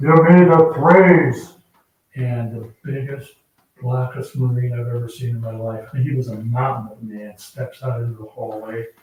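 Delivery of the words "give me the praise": booming, drawn-out shout. Retelling a Marine calling out before stepping into the hallway, retelling a booming shout. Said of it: "you hear this booming voice".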